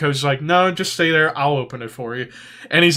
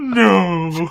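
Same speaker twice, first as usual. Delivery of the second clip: put-on tearful sobbing, drawn out; 4 semitones higher than usual. Retelling how the coach reacted when the prank was revealed, imitating someone crying. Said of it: "He starts crying like".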